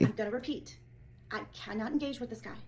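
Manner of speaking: ordinary talk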